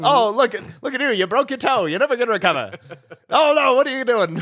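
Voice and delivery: very high-pitched broadcast announcer voice. Imagining a world where everyone talks in an announcer voice. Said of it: "everyone talks like an announcer".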